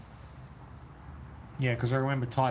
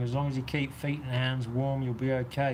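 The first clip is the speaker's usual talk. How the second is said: ordinary talk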